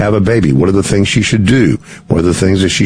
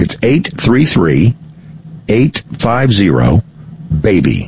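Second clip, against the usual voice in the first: said slowly at an unhurried pace. Giving listeners a phone number, saying it slowly. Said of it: "I'll say it slowly".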